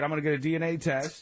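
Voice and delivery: ordinary talk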